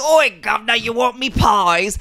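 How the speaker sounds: put-on shrill, loud, very high-pitched, hollered sick-child accent. Describing the stage Mrs. Lovett as soiled and gross: imitating Angela Lansbury's Mrs. Lovett. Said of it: "a sick child accent".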